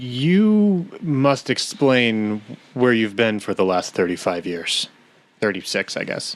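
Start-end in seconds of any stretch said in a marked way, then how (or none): 0.0-4.9 stern, slow father voice, drawn-out "you". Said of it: "he just kind of stops and he goes".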